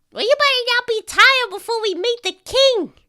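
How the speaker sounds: very high, loud put-on rat voice. Voicing a rat guiding a player to the king: rat voice. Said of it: "I'm running out of rad voices".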